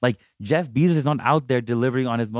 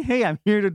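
acted eager, enthusiastic voice, higher; 9 semitones higher than usual. Retelling arriving at a customer's door at night: imitating own enthusiastic greeting. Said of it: "really enthusiastic".

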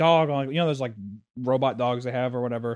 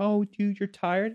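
mock fake-nice, sugary friendly tone; 8 semitones higher than usual. Speaker acts out how imagined figures would first respond, imitating fake niceness. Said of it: "they would do the fake thing at first".

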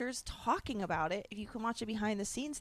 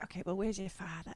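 imitated whisper. Friends discussing a film, quoting an actress's line, imitating her whisper. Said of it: "she just whispers everything".

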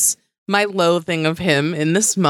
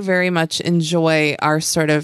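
ordinary talk, nothing marked

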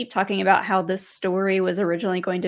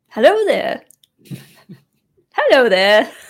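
very loud, booming, sing-song, swooping British voice; 5 semitones higher, 10 dB louder than usual. Joining the others in doing Kenobi impressions, give your Kenobi impression. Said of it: "We should all do our best Kenobi impressions".

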